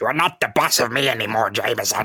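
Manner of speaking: deranged, crazed, unhinged insane voice. Recapping a story, voicing a character defying his boss, in an insane voice. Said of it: "That's my insane voice".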